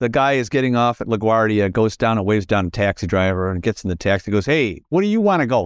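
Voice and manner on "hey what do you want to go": poor, bad put-on New York accent. Telling a joke, the taxi driver speaks in a bad new york accent. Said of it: "That's my New York accent".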